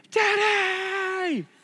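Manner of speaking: play-acted child's shrill, very high, loud, drawn-out scream. Retelling how a son greets his father at the door: imitating a child screaming. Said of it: "he just screams".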